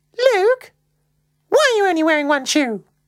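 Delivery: piping, particularly high-pitched voice. As she is about to walk out the front door, she asks him, particularly high-pitched. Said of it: "in a particularly high-pitched voice".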